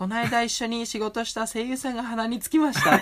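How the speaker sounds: sugary, high put-on voice with a cutting edge. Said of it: "バカバナナちゃんの声で言いますっつって".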